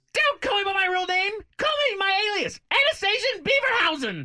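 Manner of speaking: bad, shrill voice, very high and loud. Playing an impression game, doing a bad Karen Walker impression. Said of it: "[name]'s bad impressions".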